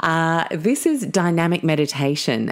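plain

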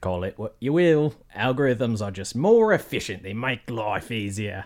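put-on voice shifting into an Australian accent. In a narrated story, a character answers another, drifting into an Australian accent. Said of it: "He's turning Australian".

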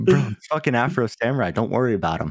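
ordinary talk

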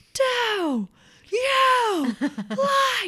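put-on very high, shrill, swooping child's scream, every word. Retelling how a child spoke to them over the dishes, imitating a child screaming. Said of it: "the child started screaming every word".

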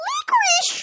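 very high, defeated, helpless shriek. Narrator reads the queen's line as the dark horde closes in: squealing helplessly. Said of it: "squealed the queen helplessly".

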